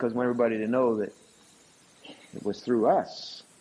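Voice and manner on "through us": 'through us' said with heavy stress. Speaking about how people report what god has done, stressing 'through us'. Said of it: "we emphasize the through us".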